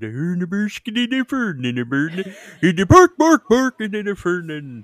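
put-on mock-Swedish gibberish voice. Retelling talking in a store: Swedish Chef voice. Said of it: "that's the Swedish Chef".

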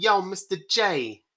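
exaggerated Brooklyn accent. Guessing how a new actress will play Harley Quinn, in an exaggerated Brooklyn accent. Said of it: "she's gonna have an exaggerated Brooklyn accent".

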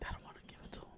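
rushed, fast, hushed whisper under the breath. Mid-story, the speaker notices they have started whispering. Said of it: "I don't know why I'm whispering".

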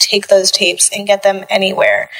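ordinary talk

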